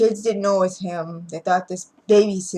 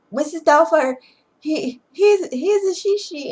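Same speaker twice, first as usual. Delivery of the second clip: play-acted, startled, dramatic, high-pitched frightened yell; 10 semitones higher, 4 dB louder than usual. Retelling a movie scene where the son yells for his sister: imitating the son yelling. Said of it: "He yelled for her sister".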